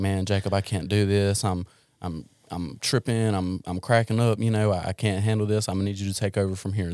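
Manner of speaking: put-on panicked voice. Recalling a phone call with John, imitating John panicking. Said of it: "You sounded panicked".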